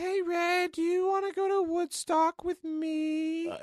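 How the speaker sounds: put-on very high, spooky, creepy ghost-girl voice. Acting out a hypothetical girl from his argument, in a creepy dead girl voice. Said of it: "Sounds like a creepy dead girl".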